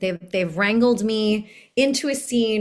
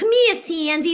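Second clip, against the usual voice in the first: put-on broadest thick Brooklyn accent, pitched higher; 8 semitones higher than usual. Imitating an old recording of own childhood community theater performance: thick Brooklyn accent. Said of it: "the thickest Brooklyn accent".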